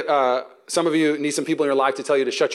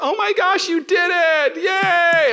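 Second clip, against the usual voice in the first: mock very high, very slow cheering praise; 4 dB louder than usual. Retelling throwing something away, imitating wife's cheering. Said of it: "she's like".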